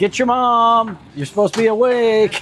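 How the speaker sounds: very high-pitched yelling. Retelling overhearing him from another room yelling at the kids, imitating yelling at kids. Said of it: "I could hear him in there like yelling at the kids".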